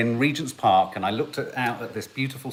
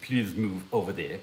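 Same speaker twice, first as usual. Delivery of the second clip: soft, very strong put-on French accent; 3 semitones lower, 7 dB quieter than usual. Joking about persuading people with vodka and a Cossack hat: very French accent. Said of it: "In a very French accent".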